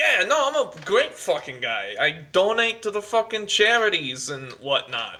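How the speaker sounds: put-on laid-on 1920s gangster accent, sing-song. Voicing a character to the other players in a tabletop game, in a 1920s gangster accent. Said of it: "the nineteen twenties gangster accent".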